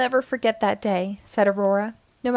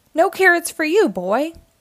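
loud, high, reproachful scolding; 7 semitones higher, 5 dB louder than usual. A prince thrown into a stream by his horse scolds it. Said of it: "Prince Philip scolded his horse".

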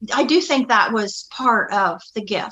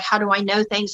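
ordinary talk, nothing marked

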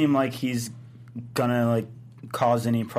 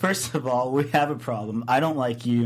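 ordinary delivery

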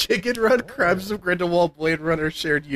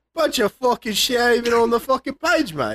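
high, put-on Australian accent; 5 semitones higher than usual. Riffing as a film crew member griping about an actor, mock australian accent. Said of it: "This all became Australian".

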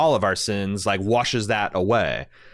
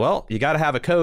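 mock-deadpan, flat delivery; 6 semitones higher than usual. Recounting a film scene, the speaker quotes the character's line, retelling a deadpan line. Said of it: "he deadpans".

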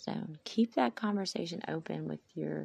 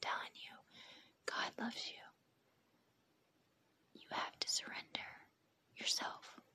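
soft, gentle, hushed whisper; 6 semitones higher, 11 dB quieter than usual. Speaker signing off to listeners at night, as if in their ear: soft whisper. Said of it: "I want y'all to hear my soft voice, like I'm whispering in your ear".

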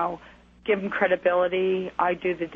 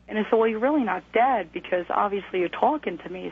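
usual speaking voice

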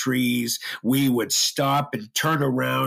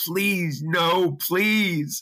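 mock tearful, high, wailing, sobbing voice; 6 semitones higher than usual. Retelling how he begged when told they were going without him: imitating someone crying and screaming. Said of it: "And he's crying and screaming".

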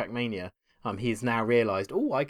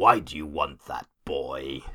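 very deep, very low, slow delivery; 9 semitones lower, 3 dB louder than usual. Retelling answering a child who asked for the daddy game voice: Kratos voice. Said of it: "talk to him like Kratos".

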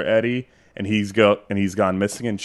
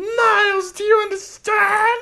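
very high, squeaky, put-on puppet-style voice; 4 dB louder than usual. Asked to do an impression, the speaker does a Roz impression. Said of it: "Or maybe a Muppet".

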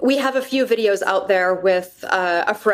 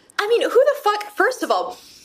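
heated, worked-up, very high, swooping rant; 13 semitones higher than usual. Discussing a gross comment with co-hosts, a speaker gets heated. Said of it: "I get really heated".

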